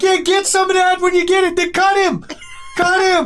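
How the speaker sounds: crowd hollering. Game narrator voicing the crowd yelling at Locke as he's brought upstairs, crowd yelling. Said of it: "And then they're yelling at Locke".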